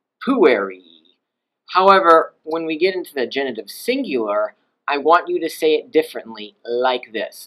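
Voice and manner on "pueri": pu stressed hard, pitch kept much lower. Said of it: "nevertheless the pitch stays low".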